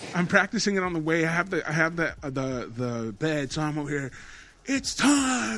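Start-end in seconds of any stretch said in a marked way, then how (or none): 4.7-5.6 high, big announcer-style yell. Retelling practicing a podcast intro on the way: retelling own yell. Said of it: "I'm fucking yelling that time".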